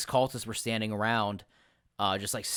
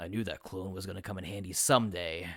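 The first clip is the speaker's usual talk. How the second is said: put-on aged, elderly-sounding old man voice; 3 semitones lower, 3 dB quieter than usual. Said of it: "in an old voice".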